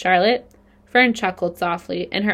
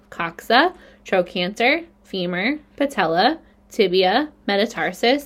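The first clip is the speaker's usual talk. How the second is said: plain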